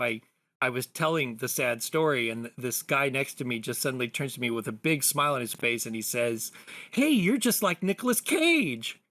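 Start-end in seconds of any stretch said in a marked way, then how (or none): 6.9-8.9 really excited, very high-pitched, swooping sing-song voice. Retelling what a guy at a comic book shop said to them: imitating someone really excited. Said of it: "really excited".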